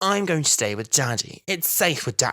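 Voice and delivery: put-on high, small young child's voice. Retelling how the child character calls for her dad: imitating the child character. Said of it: "And she's like".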